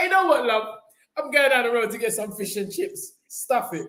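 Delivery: annoyed, fed-up, had-enough delivery. Retelling giving up on a shop: imitating own past fed-up reply. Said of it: "I'm like".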